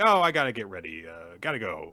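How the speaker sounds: ordinary talk, nothing marked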